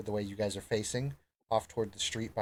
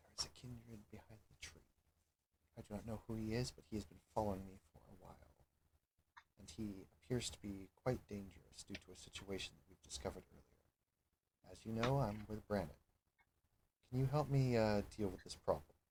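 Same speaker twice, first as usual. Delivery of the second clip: hushed, very soft, very quiet half-whisper; 11 dB quieter than usual. In character, asking another character for help, half-whispering quietly. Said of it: "I'm trying to keep it keep it quiet".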